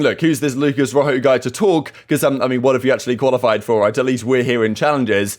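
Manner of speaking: usual speaking voice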